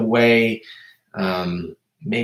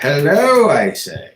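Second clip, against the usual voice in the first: high, exclamatory English accent; 5 semitones higher, 4 dB louder than usual. Greeting any listeners out there, saying hello in an English accent. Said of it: "English accent".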